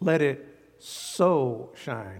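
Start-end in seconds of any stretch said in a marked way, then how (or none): 0.8-1.7 the word "so" strongly stressed. Explaining a scripture verse by repeating it: stress on so. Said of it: "with an emphasis on the method".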